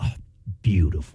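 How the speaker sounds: sarcastic mutter under breath. Retelling a father's reaction to a blown tire: imitating dad muttering sarcastically under breath. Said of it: "he would just repeat under his breath".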